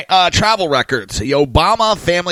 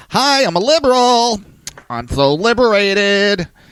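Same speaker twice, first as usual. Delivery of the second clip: put-on, exaggerated camp voice; 4 semitones higher than usual.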